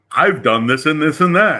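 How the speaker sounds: put-on boisterous loud voice. Imitating a fellow player's character: imitating a boisterous loudmouth. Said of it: "he's fucking the most boisterous, loudmouth".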